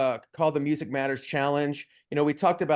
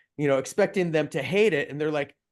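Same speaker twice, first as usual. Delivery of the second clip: ordinary delivery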